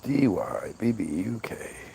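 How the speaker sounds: soft, whispered, letter-by-letter spelling.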